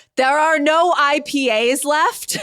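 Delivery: mock top-of-the-lungs yell, high and very slow. Retelling a man outside an event screaming about the beer running out: imitating a man screaming. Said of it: "absolutely screaming at the top of his lungs".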